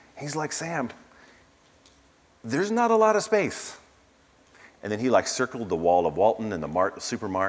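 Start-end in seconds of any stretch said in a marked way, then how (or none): 0.5-3.8 bad Arkansas accent, higher. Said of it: "That's a horrible Arkansas accent".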